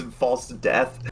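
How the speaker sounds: usual speaking voice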